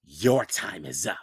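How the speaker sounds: very deep, very low, slow, drawn-out hiss. Cutting off a student mid-sentence, she hissed. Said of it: "she hissed".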